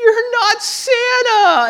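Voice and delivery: loud, very high bawling, wailing sob. Retelling playing santa when a child cried, imitating a child crying loudly. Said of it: "he starts crying really loud".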